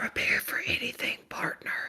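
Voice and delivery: soft, low, unvoiced whisper, close to the mic.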